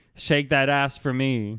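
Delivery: ordinary talk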